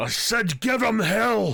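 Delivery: very high, loud shouting dwarf voice. Narrator voicing a dwarf in the crowd, yelling out. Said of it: "a dwarf yelling out".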